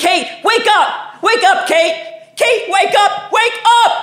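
very high, desperate, pleading scream. Retelling trying to wake someone who won't wake up, reenacting the screaming. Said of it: "and I'm screaming".

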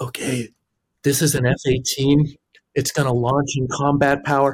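hushed stage half-whisper. Retelling a recording slate next to launching jets: imitating own half-whispering. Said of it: "I'm bloody whispering into my microphone".

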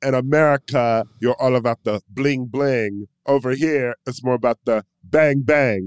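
put-on South African accent. Discussing Blood Diamond, the speaker quotes its iconic line in a South African accent. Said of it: "In a South African accent".

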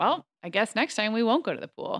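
put-on sarcastic tone. Describing how they talk to their children, the speaker acts out a mock-sarcastic remark. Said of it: "I get really sarcastic. I'll say things like".

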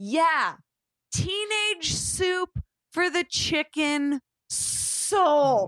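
play-acted, drawn-out, very slow, high yell. Retelling calling back across a bookstore to a worker: imitating own past yell. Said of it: "I yelled it across the bookstore".

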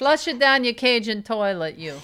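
put-on Russian-sounding accent. Imitating family members about the ashes: put-on accent sounding Russian. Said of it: "You're starting to sound Russian".

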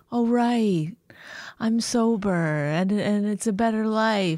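very slow, mocking, parodying put-on voice. Mocking the other speaker's sudden new voice after they mention sobriety: mocking imitation of a changed voice. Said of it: "now your voice has changed".

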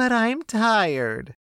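lilting, swinging sing-song voice. Retelling what a cleaner said from the other room: imitating a sing-song voice. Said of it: "Donna say in a sing-song voice".

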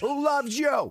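acted-out, high-pitched hollered yell. Acting out how you come home to your wife, retelling a Telly Savalas-style yell. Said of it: "I yell it".

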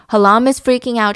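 ordinary talk, nothing marked

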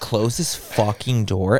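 mock annoyance, low. Retelling telling someone at midnight to close the door, retelling annoyed, lower tone. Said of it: "I get so like my tone gets lower because I'm so annoyed".

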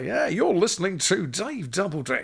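cheesy radio DJ voice. Pretending to be a DJ in the car: cheesy DJ voice. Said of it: "I'll do my cheesy D J bit".

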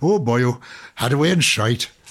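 Welsh-accented speech. Asking to do a Welsh version of the repeated phrase, in a Welsh accent. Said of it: "Can I do my Welsh version now?".

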